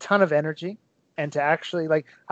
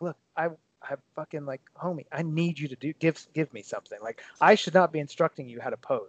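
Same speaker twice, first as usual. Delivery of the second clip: put-on whisper, quieter; 5 dB quieter than usual. Retelling urging someone to give a pose: imitating own whisper. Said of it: "whisper to him".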